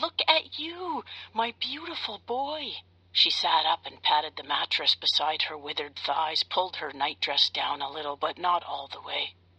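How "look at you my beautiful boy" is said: very high cry of joy and surprise. A woman in bed wakes to find the narrator beside her, crying out with joy and surprise. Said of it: "she cried out with joy and surprise".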